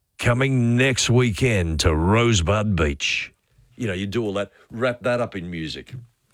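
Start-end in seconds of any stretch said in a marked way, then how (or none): 0.2-3.3 radio announcer promo voiceover voice. Showing how a show promo would sound: promo voiceover voice. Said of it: "and you're doing the voiceover".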